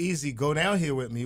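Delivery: ordinary talk, nothing marked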